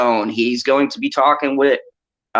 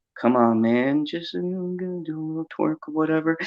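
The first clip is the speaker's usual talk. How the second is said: soft, smooth, easygoing coaxing voice; 3 semitones higher, 8 dB quieter than usual. Retelling how Gary coaxed the speaker into it, imitating Gary's smooth voice. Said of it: "Gary with his smooth voice".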